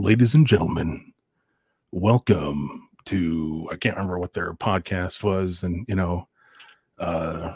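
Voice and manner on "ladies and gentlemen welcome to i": deep movie trailer announcer voice-over. Demonstrating an intro recorded for a movie critique podcast, movie trailer announcer voice. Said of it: "kind of like the voice, the movie".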